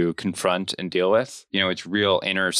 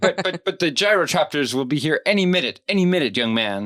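mock demanding yell, much higher pitch; 9 semitones higher than usual. Recapping a scene where a man demands Will and Lyra come with him: mock-yelling, demanding. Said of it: "he's like yelling at Lyra".

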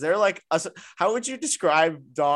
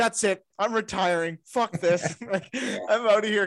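frazzled, shaken, high rattled screaming outburst; 7 semitones higher than usual. Retelling how a teammate reacted to the news: imitating someone screaming, rattled. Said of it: "screaming, like, so rattled".

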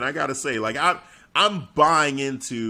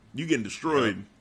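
normal talking voice

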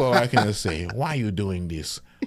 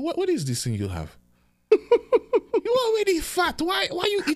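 mock motherly scolding tone, higher. Retelling Mom's reaction to a sandwich: imitating Mom scolding. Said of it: "she say".

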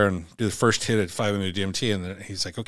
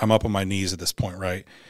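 usual speaking voice

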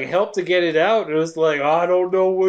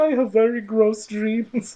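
put-on German accent in English; 3 semitones higher than usual. Retelling a scene and quoting a german character: put-on german accent. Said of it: "so he's like German".

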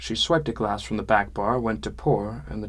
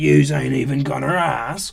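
loud, flat, deadpan delivery; 4 semitones higher, 7 dB louder than usual. Reading a story, the narrator voices the troll speaking to the narrator: said flatly. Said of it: "he said flatly".

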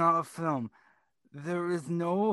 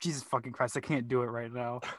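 ordinary talk, nothing marked

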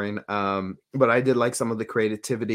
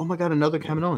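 put-on happy, delighted excitement, much higher; 6 semitones higher than usual. Speaker retelling a clone character happily greeting Senator Bertone, imitating happy excitement. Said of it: "she was happy to see Bertone".

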